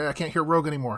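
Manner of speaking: ordinary talk, nothing marked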